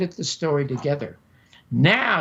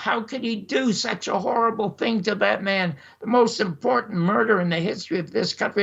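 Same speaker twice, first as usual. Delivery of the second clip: emphatic, accusing, screamed outcry; 3 semitones higher than usual. Retelling a phone call with a colleague: retelling a scream. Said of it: "I was screaming at him".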